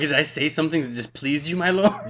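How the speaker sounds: cheeky, sass-laden, put-on sassy delivery. Retelling own past answer to a judge: sassy retort. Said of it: "Negative two for a sass".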